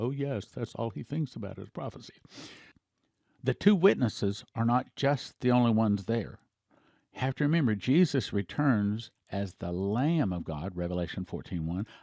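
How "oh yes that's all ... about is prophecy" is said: soft, mild grumbling, complaining tone. The speaker imitates his wife's comment about him, mock mild complaining. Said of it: "in a mild complaining voice".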